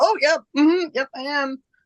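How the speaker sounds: high, surprised, suddenly certain tone.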